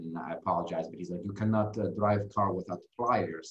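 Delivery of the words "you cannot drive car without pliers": put-on thick, heavy Russian accent. Retelling what the tow truck driver said, in a thick Russian accent. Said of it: "he has very thick Russian accent".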